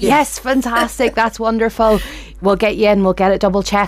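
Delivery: mock joyful, delighted gushing tone with a laugh. Retelling a man's reply on hearing the speaker's BMI, imitating someone sounding joyful. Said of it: "And you could hear the joy".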